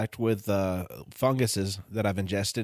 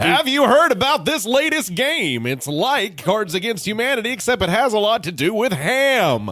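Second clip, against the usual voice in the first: very high, booming, hammy, stretched game-show announcer voice; 11 semitones higher, 7 dB louder than usual. Describing a dude who always talks like The Price is Right intro: announcer voice. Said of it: "Like dude in permanent announcer voice, like talking like the intro to The Price is Right".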